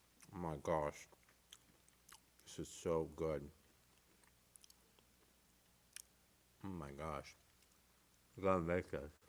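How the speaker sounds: speaking with mouth full. Tasting a cookie and reacting, speaking with mouth full. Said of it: "Bad habit of speaking with my mouth full".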